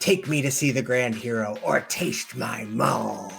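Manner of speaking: hammy, over-the-top menacing demon voice. Voicing a demon battle cleric advancing on the players: hammy threatening demon voice. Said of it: "hamming it up".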